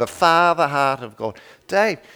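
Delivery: put-on New Zealand-style Down Under accent. Retelling what Ron told him, imitating Ron's Down Under accent. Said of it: "I'm doing a pretty good Down Under accent right now".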